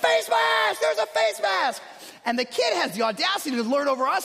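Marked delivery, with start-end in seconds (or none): 0.0-1.8 very high, lung-bursting screaming yell. Recounting yelling to the ref about a face mask penalty, retelling screaming my lungs out. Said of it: "I'm like screaming my lungs out".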